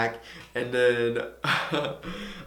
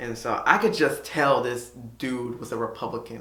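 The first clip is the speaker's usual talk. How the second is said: usual speaking voice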